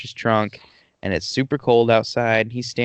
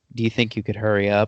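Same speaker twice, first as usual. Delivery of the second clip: put-on whispering. Retelling a movie scene where a driver asks a cop: imitating someone whispering. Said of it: "He kinda whispers to the cop".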